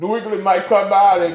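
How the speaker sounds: high, loud laughing talk. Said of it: "I'm laughing at everybody".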